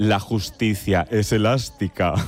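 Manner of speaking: put-on wicked voice. Recalling a line from the series Herederos, in a mock-evil Concha Velasco voice. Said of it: "con voz de muy mala, malísima".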